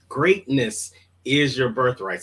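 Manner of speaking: ordinary delivery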